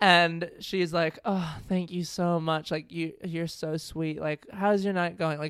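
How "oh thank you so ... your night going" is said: put-on sweet speaking tone. Retelling what a lady said after packing up, imitating someone speaking sweetly. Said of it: "she's being really sweet".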